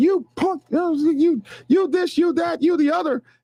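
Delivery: high, slow scream. Retelling screaming at a man who walked in front of their car: retelling a scream. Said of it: "I started screaming".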